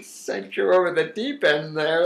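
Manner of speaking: high delivery, laughing through the words.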